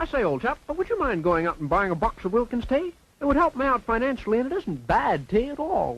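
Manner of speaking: put-on, adopted British accent. A character in an old advertisement suddenly adopts a british accent. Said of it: "he's decided to adopt a British accent to sell this tea".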